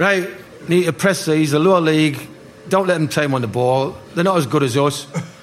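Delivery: ordinary delivery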